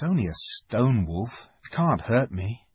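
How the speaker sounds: ordinary delivery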